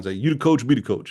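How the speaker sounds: put-on Cajun accent. Repeating what his mentor used to say all the time, imitating Bushek Nader's Cajun accent. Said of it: "as Cajun as I can get".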